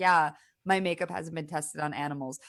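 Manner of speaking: ordinary talk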